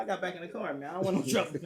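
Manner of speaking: ordinary delivery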